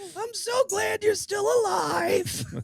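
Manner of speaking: very high, tearful, put-on crying voice, pitched way up. Continuing an impression of a mother: imitating Ian's mother, mock crying. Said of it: "Perpetually crying".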